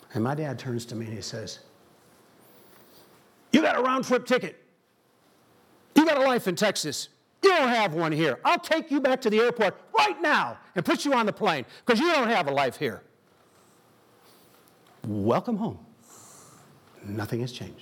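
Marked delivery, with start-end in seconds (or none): 3.5-13.0 put-on single-volume voice, higher and louder. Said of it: "representation of how my dad talked".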